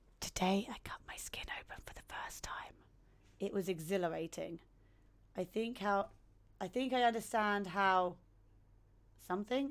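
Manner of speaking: whispering. Reading a special poem from the game aloud: whispering. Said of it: "I'm gonna have to whisper this".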